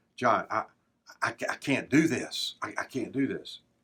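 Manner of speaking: voice brought down low, quiet and hushed. Retelling a businessman who came up after training: imitating a lowered voice. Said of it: "and lowered his voice".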